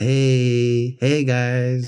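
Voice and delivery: mock boring, stalling delivery. Retelling how life coach videos all start: imitating a boring life coach video intro. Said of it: "They all start out like".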